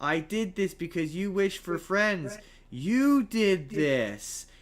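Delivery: slow, eerie, unsettling, creepy delivery. Retelling a movie scene where the Digimon turns to the boy: imitating a creepy line. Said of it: "he does this really creepy".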